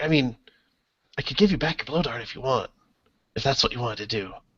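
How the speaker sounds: soft, grinning creature voice. Storyteller voicing a grinning creature to the players: voicing the grinning creature. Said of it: "He's like".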